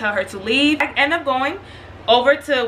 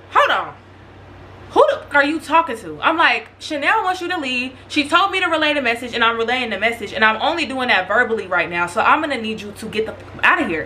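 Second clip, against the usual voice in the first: normal talking voice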